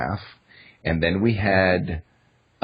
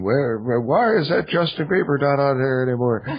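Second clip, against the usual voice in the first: put-on elderly man voice, pitched up; 7 semitones higher than usual. Answering listeners who ask about justin bieber, going into his old man voice. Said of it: "I always go into my old man voice for them".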